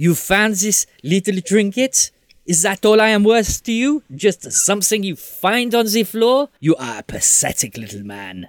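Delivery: high-pitched character voice with wide swooping pitch. Voicing Veronique turning on Seamus. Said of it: "Veronique turns around and says".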